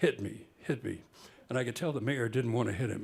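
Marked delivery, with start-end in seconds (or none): 0.0-1.0 drawn-out stage whisper. Retelling what a boxer told the mayor during the round: retelling a stage whisper. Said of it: "Ali said to the mayor in a stage whisper".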